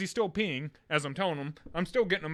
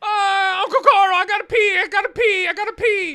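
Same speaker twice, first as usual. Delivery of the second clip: put-on shrieking child, very high and very loud; 14 semitones higher, 13 dB louder than usual. Retelling a kid in the car needing to pee: imitating a child screaming. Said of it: "just screams it".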